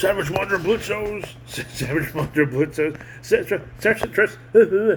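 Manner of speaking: rattled off fast until the tongue trips.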